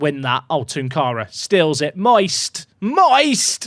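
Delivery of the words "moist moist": high, full-throated yelling at the top of the lungs. Speaker commenting on a football match, shouting at the top of the voice. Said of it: "I'm just shouting moist at the top of my voice".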